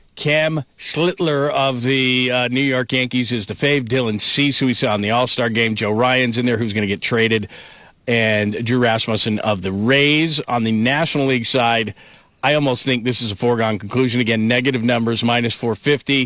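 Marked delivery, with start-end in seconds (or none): 0.2-2.3 very slow, drawn-out delivery, every syllable stretched. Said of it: "I'll say this very slowly".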